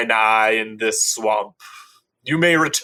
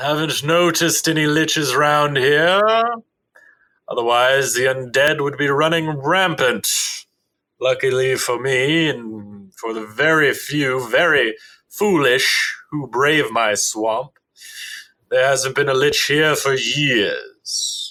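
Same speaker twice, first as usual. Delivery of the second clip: imposing, ancient adult dragon voice.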